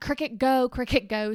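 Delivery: mock frantic, panicked, urgent calling-out voice. Speaker retelling yelling at her dog cricket as a cat attacks, retelling a panicked scream.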